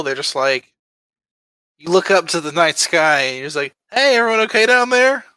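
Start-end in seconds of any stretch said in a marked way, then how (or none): 3.9-5.2 cheery, bright, friendly hero voice, pitched high. Picturing a hero waving from a rooftop: mock-friendly hero voice. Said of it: "a friendly Jake standing on a rooftop".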